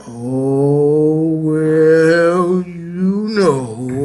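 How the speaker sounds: very slow, gloomy drawl, stretched-out oh. Imitating a man the speaker knows answering a greeting: Eeyore-like voice. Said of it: "talk like Eeyore".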